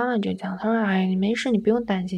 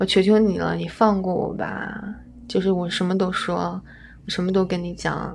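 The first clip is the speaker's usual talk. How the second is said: plain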